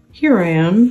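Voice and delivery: growly storybook bear voice. Narrator reading a story; Pooh answers Christopher Robin from behind him, growly Pooh voice. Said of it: "said a growly voice behind him".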